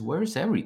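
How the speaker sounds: hushed, half-muttered under the breath. Retelling what the doctor said under his breath: imitating someone muttering under breath. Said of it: "under his breath, talking to himself".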